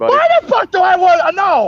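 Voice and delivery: high, swooping, protesting shout. Protesting a teasing claim about what he wants: yelling. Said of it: "Why are you yelling at Wilhite?".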